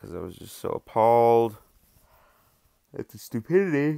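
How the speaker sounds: words stretched while yawning. Explaining why a poem was written, yawning while talking. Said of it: "Sorry, yawning".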